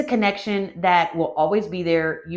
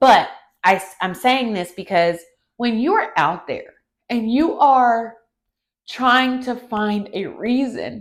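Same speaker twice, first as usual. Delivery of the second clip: tearful, choking-up voice with audible tears; 4 semitones higher, 4 dB louder than usual. Speaking directly to listeners while openly emotional, in a tearful voice. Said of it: "you hear the tears in my voice".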